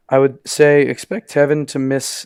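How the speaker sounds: voice cracks on the word "miss". Speaker explaining how long a high ankle sprain keeps a player out, voice cracking. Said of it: "There's that voice crack to miss".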